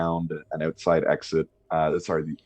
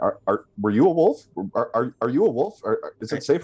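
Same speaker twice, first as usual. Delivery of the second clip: flustered, overlapping talking-sheep voices, higher pitched; 7 semitones higher, 4 dB louder than usual. Voicing sheep who all talk at once to a player: sheep all talking at once. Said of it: "all at once, they just start going".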